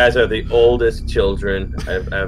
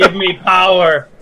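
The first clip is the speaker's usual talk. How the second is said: high-pitched yelling in a character voice; 8 semitones higher, 4 dB louder than usual. Playing a character who yells during a blackout: yelling in character. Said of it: "Jezebel just starts yelling".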